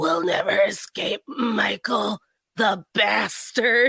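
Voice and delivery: smoky, raspy voice, very slowly delivered. Retelling a sister's take on an actress in a Halloween movie; smoky, raspy Jamie Lee Curtis impression. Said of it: "in a smoky, raspy voice".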